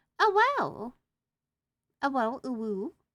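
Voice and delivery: high, loud, swooping, put-on feminine-sounding voice. Reading out keyboard symbols, reacting in a feminine-sounding voice. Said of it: "Ooh I have a feminine voice".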